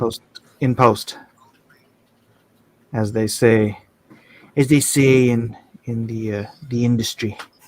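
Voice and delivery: low, laid-back, trying-to-be-cool tone. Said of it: "he's trying to be all cool".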